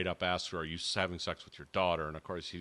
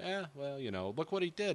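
mock, completely nonplussed, pitched-up, offhand, unbothered tone; 8 semitones higher, 3 dB quieter than usual. Retelling how a character answers the cops: imitating a nonplussed shrug. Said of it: "completely, like, nonplussed".

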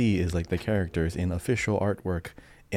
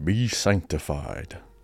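over-deep, grand, important-sounding voice. Asked by a co-host to say a line for him, the speaker answers in a deep voice. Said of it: "A little too deep".

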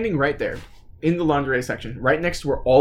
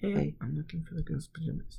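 hushed, extremely quiet, barely audible; 2 semitones higher, 13 dB quieter than usual. Retelling asking a cashier for pajamas: imitating own extremely quiet voice. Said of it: "I'm gonna be extremely quiet".

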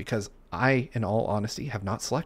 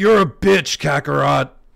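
slow, rough-edged bellowing voice; 4 semitones higher, 11 dB louder than usual. Imitating a cartoon character insulting his rival: Vegeta impression. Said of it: "that's my best Vegeta".

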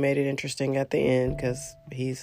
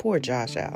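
usual speaking voice

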